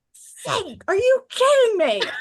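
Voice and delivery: mock outraged, very high-pitched shout, drawn out. Retelling yelling at the TV during a film clip: retelling own angry yell. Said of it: "I think I yelled out loud".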